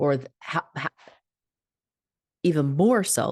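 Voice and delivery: stammering a little. Speaker teaching about basing happiness on pleasing others: stuttering. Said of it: "I'm stuttering a little bit".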